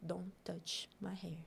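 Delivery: grave, dead-serious, very soft, no joking. Retelling a friend's reply to a laughing castmate, imitating a friend, very serious. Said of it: "Bem sériazona, assim".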